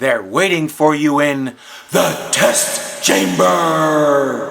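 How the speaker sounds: low, dark, ominous, foreboding, drawn-out delivery. Repeating a warning to Gordon about the test chamber, said ominously. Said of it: "Why did he say that so ominously?".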